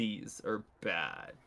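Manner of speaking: voice dropped an octave. Retelling how he said the spiders are bad, voice dropped an octave. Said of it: "his voice dropped an octave".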